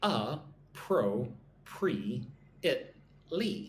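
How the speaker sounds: very slow, broken carefully syllable by syllable. Teaching learners how to pronounce a vocabulary word, syllable by syllable. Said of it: "Five syllables".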